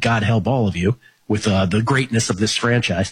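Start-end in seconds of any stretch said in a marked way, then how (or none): none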